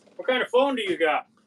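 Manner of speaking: high, loud, unrestrained screaming. Forgetting a chest microphone is on, screaming. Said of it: "sorry, I'm screaming".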